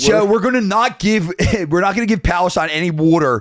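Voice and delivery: put-on Philadelphia accent. Imagining a politician speaking in the speaker's own Philly accent: Netanyahu with a Philly accent. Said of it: "the way he says water".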